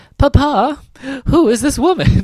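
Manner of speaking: put-on very high-pitched little-girl voice. Retelling a film scene where a little girl questions her father: Orphan Annie voice. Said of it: "I love your little Annie orphan, you know, Orphan Annie voice".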